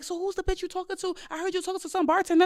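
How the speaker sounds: furious, angry yelling, pitched very high. Acting out a woman yelling at him at the speaker's workplace, retelling an angry yell. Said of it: "she just was yelling at him like".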